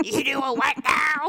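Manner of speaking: super smoky voice with big growl.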